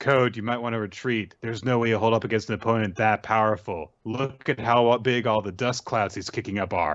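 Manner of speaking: ordinary talk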